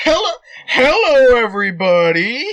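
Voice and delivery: comic, high, loud little puppet voice. A host wiggling a bug finger puppet, greeting everybody; bug finger-puppet voice. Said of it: "[name] slipped his bug puppets onto his fingers. / [name] starts sewing dead bugs together to make small, acute finger puppets. [name] crafted a bug puppet for each finger. / He named them after guest".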